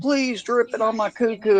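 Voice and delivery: mock piercing, very high, shrill scream. Retelling what a girl in a short video said: imitating a girl screaming. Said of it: "this girl was screaming".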